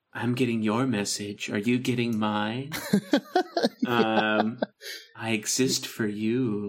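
sultry, alluring, seductive come-hither voice. Host imitates a female character described as sultry: sultry voice. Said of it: "She's very, like, sultry".

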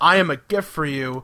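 robot-like talking voice. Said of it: "starts talking like a robot".

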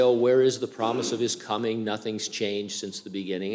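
ordinary delivery

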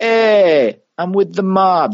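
put-on Italian accent, very high-pitched, very slow. Imagining claiming to be with the mob: italian accent. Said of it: "This is my Italian accent".

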